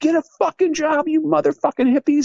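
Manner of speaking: furious, very high-pitched angry screaming yell. Retelling how he yelled at hippies playing disc golf every day: retelling an angry yell. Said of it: "I would scream and yell at them".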